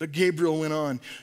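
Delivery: ordinary delivery, nothing marked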